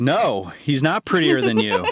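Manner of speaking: put-on shouting. Retelling how Whitney answered the movie: imitating Whitney shouting at the screen. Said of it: "Shouting at the screen".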